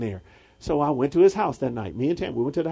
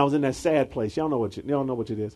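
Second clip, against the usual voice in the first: ordinary talk, nothing marked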